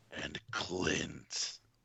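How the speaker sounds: deep, creepy, sinister put-on villain voice. A podcast guest introduces himself during the show's intros, in a deep creepy voice. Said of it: "I had no idea your voice could get that deep".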